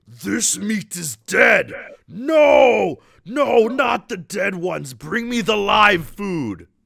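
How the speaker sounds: large, echoing, booming voice, very high, very slow. A voice echoes through a firelit room full of goblins: large voice. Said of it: "you hear this like large voice".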